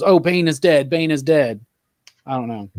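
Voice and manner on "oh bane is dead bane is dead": ordinary talk, nothing marked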